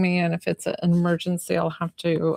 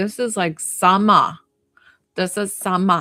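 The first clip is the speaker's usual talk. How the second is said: put-on Boston accent; 4 dB louder than usual. Imitating visiting friends from Boston: Boston accent. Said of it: "the Boston accent".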